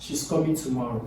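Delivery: statement tune with pitch falling on tomorrow. Intonation lesson, example of a statement: falling pitch on tomorrow. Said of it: "You see that it ends with a downward pitch".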